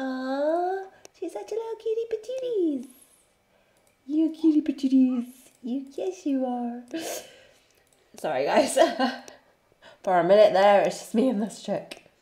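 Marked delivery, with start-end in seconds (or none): 0.0-6.8 put-on very high, cooing baby-talk voice. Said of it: "I'm talking in this voice".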